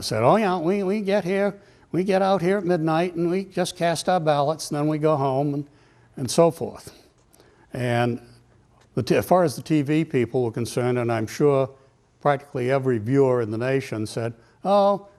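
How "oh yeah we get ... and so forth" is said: put-on New Hampshire accent, much higher pitch. Quoting an old man asked by TV about voting; imitating a New Hampshire accent. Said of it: "putting on his best New Hampshire accent".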